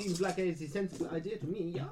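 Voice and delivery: put-on accent slipping into German. Voicing a character who agrees with waiting for police: accent slipping into German. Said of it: "my accent keeps going German".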